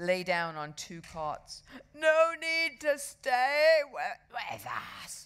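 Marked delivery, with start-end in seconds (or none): 1.9-5.3 very slow, drawn-out groan, pitched up. Narrator reading a seasick boy's line in the first aid room, groaning. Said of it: "groaned Henry".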